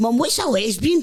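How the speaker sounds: loud, high, top-of-the-voice blurted shouting. Retelling asking mum a question in a busy shop: imitating own childhood shout. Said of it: "at the top of my voice".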